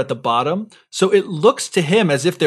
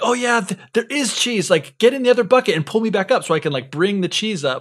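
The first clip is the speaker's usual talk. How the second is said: acted, high, super excited eager wolf voice; 5 semitones higher than usual. Retelling a fable, voicing the wolf at the well bottom: imitating an excited wolf. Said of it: "super excited, saying".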